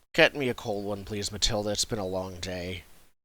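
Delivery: low, bone-tired, worn-out, weary knight voice. Voicing a knight who walks into the inn tired: tired knight voice. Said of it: "he walks in tired".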